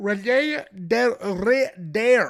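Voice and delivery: name pronounced with French accent. Naming the next opponent, saying the name with a French accent. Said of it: "I love pronouncing it like he's a French".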